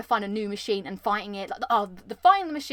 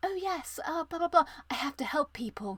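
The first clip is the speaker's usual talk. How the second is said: pretentious, self-righteous, holier-than-thou voice; 6 semitones higher, 5 dB quieter than usual. Mocking a game character who is found pretentious: pretentious Aloy impression. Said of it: "I just found her a little bit pretentious".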